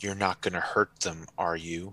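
low, hushed, menacing, threatening tone. A woman confronting a man, menacingly threatening. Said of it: "menacingly threatening".

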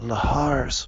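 soft-spoken. He clears his throat and finally answers, said softly. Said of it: "finally said softly".

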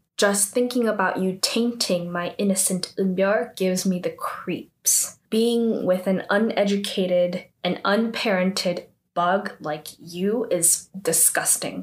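ordinary talk, nothing marked

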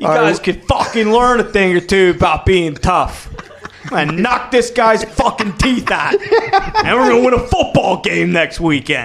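loud, fake put-on tough-guy accent and voice. Acting out a speech to the football players, in a put-on tough-guy accent. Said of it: "What accent is that?".

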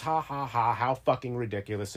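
ordinary talk

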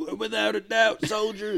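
put-on pompous, stiff old officer voice, high and creaky.

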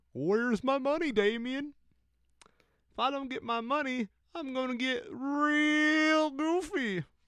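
very high cartoon voice, 'real' drawn out. Retelling a video of a guy harassing his roommate with a puppet: Goofy voice. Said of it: "in like a really good Goofy accent".

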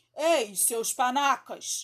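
shouting. The hero imitates the captain, calling out to the pirates, shouting in Captain Hook's voice. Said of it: "gritou ele".

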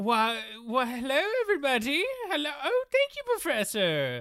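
odd, squeaky, very high put-on character voice. Greeting everybody as the teaching assistant after being introduced: weird put-on voice. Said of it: "I put on a weird voice now".

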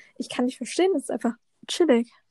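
ordinary talk

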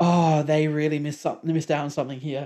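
ordinary delivery

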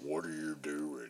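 very low voice in a slow drawl.

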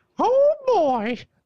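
very high little cartoon mouse voice. Asked to just do the line, the speaker does his Mickey Mouse impression. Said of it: "I could do Mickey Mouse".

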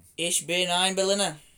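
put-on Boston accent. After saying 'let me try', attempting a Mayor Quimby Boston accent. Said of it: "Boston accent, isn't it?".

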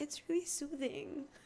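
put-on high, soft, slow child voice. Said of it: "And he goes".

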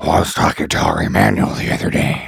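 put-on horrible old-man voice, breathy and half whispered. Showing how he sounds worse now than ten years ago, do a Vince impression, horrible old man. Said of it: "actually sounds worse than like my impression of him".

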